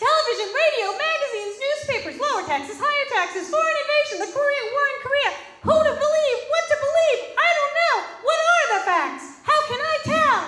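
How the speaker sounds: very high, very loud, shrill, squeaky cartoon man. Impersonating a cartoon man from a campaign ad, squeaky cartoon man voice. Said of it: "he has this kind of squeaky voice".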